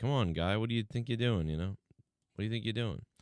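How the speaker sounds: put-on irritated, dismissive, annoyed tone. Imitating a wrestler swatting a kid away, imitating CM Punk annoyed.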